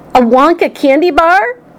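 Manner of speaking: high, drawn-out cry, exclaimed aloud. Charlie answers his mother, who says he'll open his birthday present, crying out.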